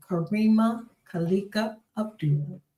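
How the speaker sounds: slow, deliberate, careful pronunciation of each part of name. Host introduces her co-host by full name, saying the name slowly. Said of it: "I have to say it slow though".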